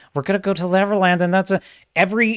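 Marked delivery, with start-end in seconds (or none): 0.2-1.2 flat droning monotone through clenched teeth, no lift. Imitating an actor's line delivery, in a flat droning monotone through teeth. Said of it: "His lines are delivered through his teeth like this".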